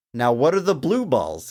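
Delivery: ordinary delivery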